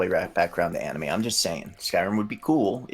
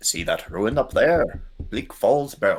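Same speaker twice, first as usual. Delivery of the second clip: slow vampire voice with tongue on teeth; 3 dB louder than usual. Imitating a character pointing out a ruin: vampire-like Ralof voice. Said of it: "talk like a vampire".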